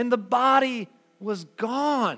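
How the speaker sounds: joyful and bewildered through tears. Retelling a friend's words to listeners, imitating tearful, confused joy. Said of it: "she says this through tears of joy and confusion".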